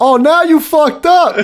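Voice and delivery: shrill, very high, full-volume shouted outburst. Quoting a favorite line from the Lincoln comedy sketch: imitating Abraham Lincoln sketch line. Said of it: "the Lincoln one, I do, like, say in my car".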